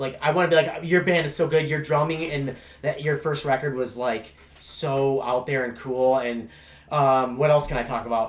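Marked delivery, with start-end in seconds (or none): none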